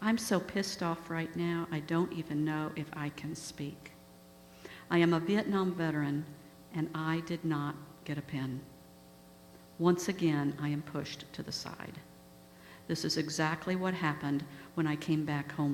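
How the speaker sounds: ordinary delivery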